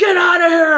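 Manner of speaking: frantic, very high, very loud screaming yell. Retelling yelling at coyotes from near the door, acting out a scream. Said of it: "I am screaming and hollering and freaking out".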